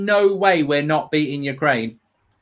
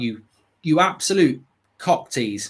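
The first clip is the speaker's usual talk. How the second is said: usual speaking voice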